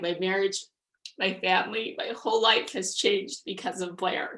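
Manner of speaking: choked up, teary, near tears. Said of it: "I'm going to cry".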